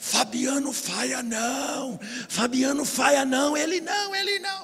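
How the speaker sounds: play-acted high, rising demon shout. A preacher retelling a possessed person crying out during his sermon; imitating a demon shouting. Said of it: "o diabo gritava".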